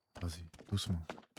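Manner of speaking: very soft, hushed, sneaking voice.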